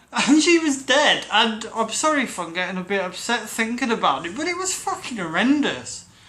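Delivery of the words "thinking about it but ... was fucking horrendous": ordinary talk, nothing marked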